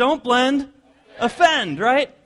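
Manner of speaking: loud, high-pitched, emphatic delivery.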